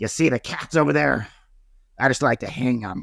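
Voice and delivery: dead serious, threatening tone. Retelling a coworker's joke in a crowded elevator: John Gotti voice. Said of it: "He was doing John Gotti's voice".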